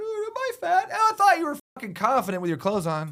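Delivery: high, loud mock self-conscious girlish worry. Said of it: "You're like".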